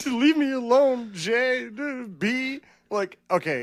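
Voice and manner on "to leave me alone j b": mock tearful wrestler voice, higher pitch. Retelling a wrestling scene, imitating Bianca Belair crying. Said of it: "Bianca Belair and Naomi crying".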